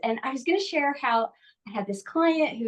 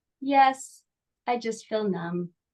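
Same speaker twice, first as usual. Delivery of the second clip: very slow, dead-level, flat monotone drone. Retelling what a woman answered halfway through a session, imitating a very monotone voice. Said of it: "in a very monotone voice".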